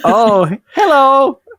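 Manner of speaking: put-on Swedish accent, pitched very high. Showing off an accent after discussing the Swedish guy in Frozen: Swedish accent. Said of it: "That's my Swedish accent".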